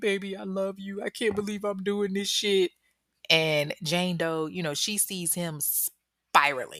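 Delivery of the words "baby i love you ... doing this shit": mock weepy, sobbing, tearful voice. Retelling the captor's change of mood: imitating someone crying. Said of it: "the next minute he's crying".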